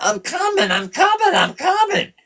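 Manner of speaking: mock screaming, very high pitch. Retelling the mother at the kicked-in door: imitating a mother screaming. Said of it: "my mother's screaming".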